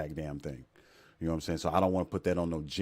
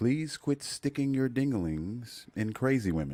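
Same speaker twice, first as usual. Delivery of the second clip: slow, higher-pitched put-on radio announcer voice; 6 semitones higher than usual. Delivering a public service announcement for men in a put-on radio announcer voice. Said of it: "Let me jump into my radio voice".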